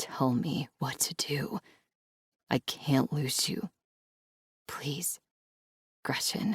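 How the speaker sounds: soft, hoarse, raspy voice strained by held-back feeling. A man pulling the narrator toward him and pleading with her, raspy strained voice. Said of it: "Luca's voice is raspy, strained by the emotions".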